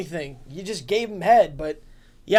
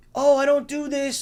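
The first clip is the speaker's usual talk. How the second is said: mock, put-on little-kid voice; 4 semitones higher than usual. Streamer mocks another streamer for trying to sound like a kid, in a fake kid voice. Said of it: "Why are you trying to sound like a kid?".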